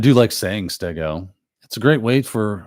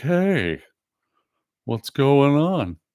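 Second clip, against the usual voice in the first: very slow, high, dragged-out slowed-down playback voice; 6 semitones higher than usual. Speaker showing how people sound in videos played at half speed, slowed-down video voice. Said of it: "they really slow down, and they're just talking like this".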